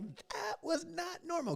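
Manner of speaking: high, slow, stunned, disbelieving realization. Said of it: "and you're like".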